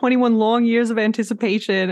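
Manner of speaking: ordinary talk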